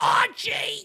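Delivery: calling out, pitched very high. Imitating Edith Bunker calling out a name: Edith Bunker voice. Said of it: "Just like Edith Bunker".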